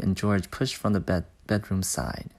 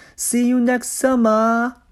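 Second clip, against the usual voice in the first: shrill, high, very loud shout; 8 dB louder than usual. A boy escaping in a car yells back at the people hanging out of his window. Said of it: "Harry yelled".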